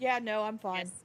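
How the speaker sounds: ordinary delivery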